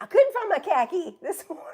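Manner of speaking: fake Boston accent, very high and loud. Joking about how Bostonians say car keys; put-on Boston accent. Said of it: "if you're a Bostonian, the way that you say um, car keys".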